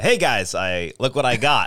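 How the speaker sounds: ordinary talk, nothing marked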